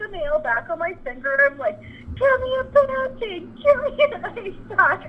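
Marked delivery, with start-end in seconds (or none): 2.2-5.1 very high, shrill screaming in agony. Retelling a torn-nail injury and asking for an ice pack, retelling screaming in pain. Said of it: "can't stop screaming".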